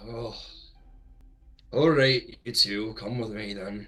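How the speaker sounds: reluctant, unwilling, grudging tone. Voicing a character who agrees to bring two others along: reluctantly. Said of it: "kind of like reluctantly says".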